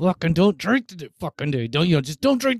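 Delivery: acted through clenched teeth. Speaker acts out what they used to tell themselves, reenacting speaking through gritted teeth. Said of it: "I was like fucking through my teeth".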